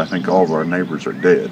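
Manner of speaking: ordinary talk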